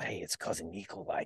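soft whisper spoken very close. Retelling greeting someone at an event, imitating a whisper. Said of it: "I whispered in his ear".

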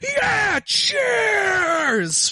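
shrill, high, swooping, drawn-out shout. Voicing a character calling from another table: shouting. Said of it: "just shout".

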